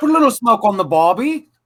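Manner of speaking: attempted British accent, very high pitched. Asked to do a reading in a British accent, attempting a British accent. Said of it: "Can you do it in a British accent?".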